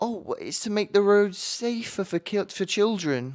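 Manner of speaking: very high, superior, condescending talking-down tone. Retelling what an old woman at the door said: imitating a condescending tone. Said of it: "in the most condescending, "I am better than you" tone".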